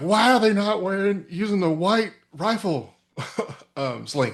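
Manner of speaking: shrill, very high, shrieking, screamed complaint. Recounting how the other speaker called from the parade field, imitating someone screaming. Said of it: "screaming at me like".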